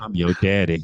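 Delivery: mock sexy, deep, low, loud voice. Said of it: "You cannot be doing that voice and say the word daddy".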